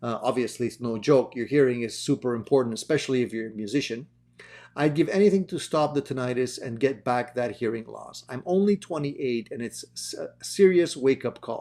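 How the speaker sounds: ordinary talk, nothing marked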